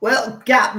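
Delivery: bad put-on Cockney accent. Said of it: "but it's very bad Cockney".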